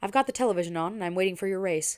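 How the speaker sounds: ordinary delivery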